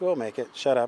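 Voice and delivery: ordinary talk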